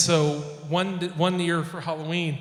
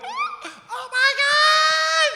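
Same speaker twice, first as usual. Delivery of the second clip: mock very high, very slow, drawn-out excited shout; 5 dB louder than usual. Retelling a party crowd's reaction to a costume: imitating excited crowd reaction. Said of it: "They lost their shit".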